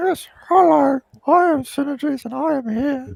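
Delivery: loud, very high-pitched voice. Pretending to be another player who was asked if he is there: imitating Synergies. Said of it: "Sin doesn't sound like that".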